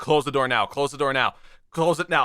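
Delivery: ordinary talk, nothing marked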